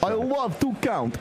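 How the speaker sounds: vampire voice, pitched way up. After the other speaker compares a voice to the Count, confirming it: Count from Sesame Street voice. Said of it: "sounds a little bit like the Count from Sesame Street".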